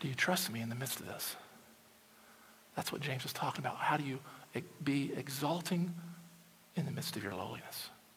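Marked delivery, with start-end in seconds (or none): 0.0-1.4 quiet, soft, hushed, near half-whisper. Voicing Jesus speaking to a struggling listener: half-whispering as Jesus. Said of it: "and he's whispering".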